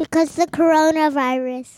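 full-volume, loud shouted yell. Answering a question about being stuck at home: yelling. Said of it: "you don't have to yell".

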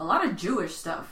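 sneering, disdainful, hate-filled tone of open contempt. Answering a question in a group about other events, hateful tone. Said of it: "there was so much hate in your voice".

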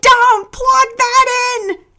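shrieking, shrill, loud scream, very high. A woman sees the narrator running an extension cord outdoors: screaming. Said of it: "She screamed".

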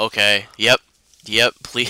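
imitated flat, dead, automated monotone. Retelling how a film character answers his sisters: imitating a flat automated tone. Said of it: "his tone is very automated".

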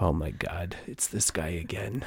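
put-on stoic, unimpressed voice. Retelling how store clerks greeted a repeat customer: imitating a stoic store clerk. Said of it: "they were always so stoic, like".

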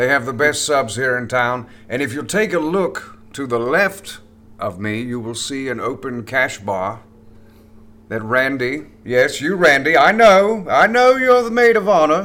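put-on British actor voice. Imagining Patrick Stewart hosting a wedding as the MC: Patrick Stewart impression. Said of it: "I was thinking it would be something like".

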